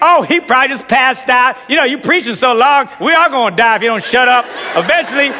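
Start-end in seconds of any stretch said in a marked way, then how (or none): none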